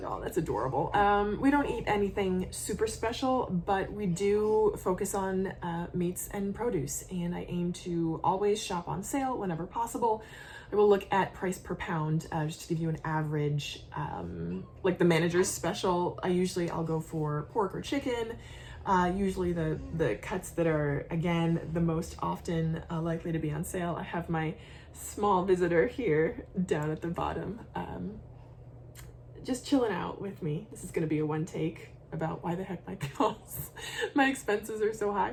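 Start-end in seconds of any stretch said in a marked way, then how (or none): 0.0-0.9 low, facetious, mock-sweet coo. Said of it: "meant facetiously".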